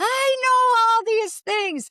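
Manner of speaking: high, slow, loud, stretched-out defensive voice.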